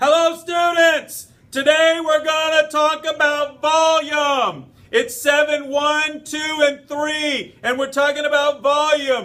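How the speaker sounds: shouting at full volume, very high pitch. Opening a lesson on volume to the students: really loud voice. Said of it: "And this is really loud".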